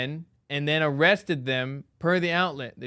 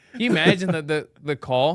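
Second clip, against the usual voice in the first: ordinary talk, nothing marked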